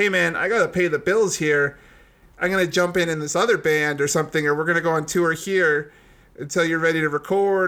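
ordinary talk, nothing marked

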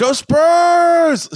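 mock super loud, very high cheer, drawn out. Recalling cheering with a friend, retelling a super loud shout. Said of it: "super loud".

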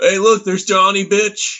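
very high, piping, pushed-up voice. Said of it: "you have to do it in Kenneth and Ryan's voice".

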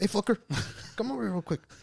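very high put-on grandma voice, calling out. Acting out a grandma calling a nine-year-old at a birthday party: imitating a grandma. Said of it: "she calls you over".

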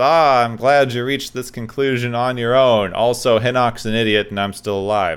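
normal talking voice

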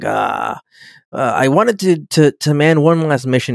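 slow, showy, full-of-himself cocky drawl. Retelling a scene from an episode: imitating a cocky tone. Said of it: "he gets really cocky".

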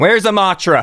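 shouting out. Narrating a game scene where Boren shouts out to the assistant, shouting. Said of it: "Boren shouts out to the assistant".

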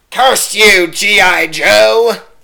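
very high hissing character voice, slow. Performing the line everyone wants to hear, in a hissing Starscream voice. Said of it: "a little bit more hiss in the voice".

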